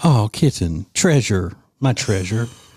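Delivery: sarcastic, falsely syrupy-sweet, condescending tone. Speaker demonstrates calling the wife a pet name, sarcastically sweet. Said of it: "I'm going to say it like a sweet".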